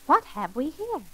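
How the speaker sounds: plain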